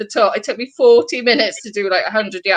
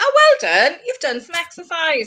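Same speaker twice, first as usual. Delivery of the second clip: sarcastic sing-song, pitched up; 7 semitones higher than usual. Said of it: "technology's too sarcastic now".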